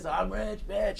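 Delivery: very quiet, high, badly inflected rock-star voice. Retelling a man's performance with the microphone held up, mock rock-star delivery. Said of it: "his inflection was so bad, so wrong ... kind of rock star thing".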